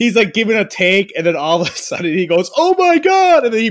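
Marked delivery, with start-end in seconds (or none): 2.6-3.4 very high, loud, fake panicked cry. Retelling a friend's prank call to a radio host: imitating a panicked shout. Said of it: "like he's about to crash".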